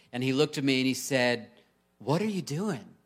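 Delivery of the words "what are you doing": put-on confused, disoriented, half-awake child voice. A parent retelling what their four-year-old son said on waking, mock-disoriented. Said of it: "kind of disoriented".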